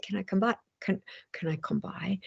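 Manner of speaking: put-on gentle Austrian accent. Quoting a woman who called back hours later, Austrian accent. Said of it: "she said it with her Austrian accent".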